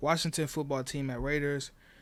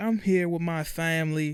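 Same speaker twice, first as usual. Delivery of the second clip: forced, fake slight Southern accent lilt; 3 semitones higher, 5 dB louder than usual. Retelling a coach's speech at a basketball game: Brian Kelly fake Southern accent. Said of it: "throwing hints of the Southern accent in there".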